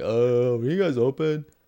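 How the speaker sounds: mock drunken slurring. Retelling what a drunk friend asked security: imitating drunk slurring.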